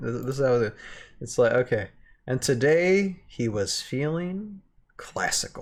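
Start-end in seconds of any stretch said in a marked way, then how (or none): 2.3-5.6 slow, swooping, dramatic pause before "classical". Rereading a line from a short story aloud: dramatic pause before classical. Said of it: "your cadence in reading that line also helped".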